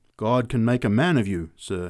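ordinary delivery, nothing marked

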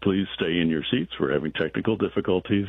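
ordinary delivery

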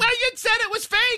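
mock dopey voice, pitched way up high.

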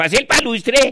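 shrill, loud, put-on fake Russian accent. With the hat's ear flaps pulled down, the speaker talks in a mock Russian accent. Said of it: "queda hablando como ruso".

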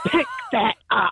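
grumpy mum voice. Retelling telling someone off with a finger wag, in a put-on grumpiest mum voice. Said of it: "in like my grumpiest mum voice".

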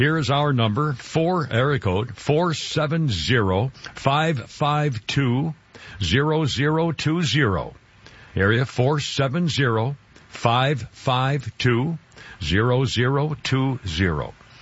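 drawn out very slowly. Radio host giving the station's temporary phone number, very slowly. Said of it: "I'm saying that very slowly".

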